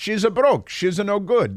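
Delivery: put-on high Italian accent with added a sounds. Speaker reads out a tweeted joke, in an Italian accent. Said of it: "speaking an Italian accent".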